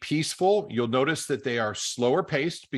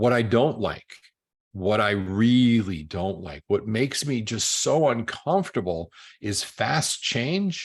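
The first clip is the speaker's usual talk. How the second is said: slow, steady, peaceful, reserved, feeling-led speech. Speaker demonstrates how the S personality type talks, talking a little slower. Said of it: "you'll notice that I talk a little slower".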